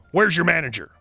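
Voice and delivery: gruff tone. Reading a story where a customer breaks the silence: gruff. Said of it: "with a gruff".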